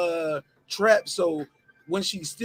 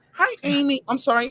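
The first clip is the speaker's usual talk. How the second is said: high, fake, put-on polite voice; 8 semitones higher, 4 dB louder than usual. Showing how you have to apologize after an email complaint, using a fake voice. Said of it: "you gotta use your fake voice".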